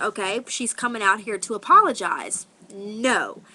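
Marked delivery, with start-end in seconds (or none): none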